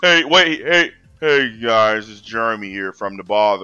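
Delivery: acted-out bored, reluctant, put-upon delivery, low. Mocking how a YouTuber starts his videos: imitating Jeremy's bored delivery. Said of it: "that's how he talks".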